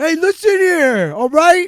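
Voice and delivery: loud, high-pitched mobster voice. Speaker riffs on the other's idea of a Star Wars Ewok mobster, in an Ewok mobster voice. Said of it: "I thought you were an Ewok mobster".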